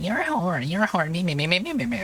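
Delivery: mocking meh-meh imitation voice. Imitating someone's repeated insult in a mocking meh-meh voice. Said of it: "I was gonna do the mocking, like, meh, meh, meh, meh voice".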